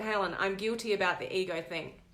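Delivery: ordinary delivery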